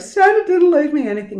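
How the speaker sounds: sobbing, tearful crying, pitched very high. Retelling going into parents' room on Christmas morning: imitating own past crying. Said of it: "I went into my mum and dad's room crying".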